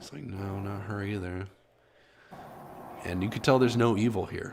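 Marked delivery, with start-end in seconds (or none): 0.2-1.5 slow, muttering voice of death, musing to himself. Voicing death, heard talking to himself: voice of death talking to himself. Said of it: "you hear the voice of death".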